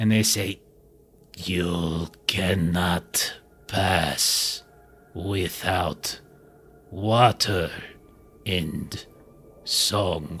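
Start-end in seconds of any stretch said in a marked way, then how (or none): 1.4-10.4 low, very slow, halting, dry, modulated voice. A narrator voices a being that speaks in a dry, parched, modulated voice. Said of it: "horrible like voice that is half like just dry, parchy throat".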